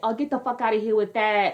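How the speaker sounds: fake, tough, high-pitched Bronx accent. Mimicking a woman from Kansas who claimed to be from the Bronx, put-on Bronx accent. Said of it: "she would just have like this accent".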